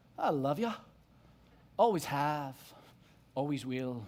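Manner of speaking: attempted put-on Scottish accent. Quoting a line from a movie, in a put-on scottish accent. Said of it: "I'm going to try my best Scottish accent".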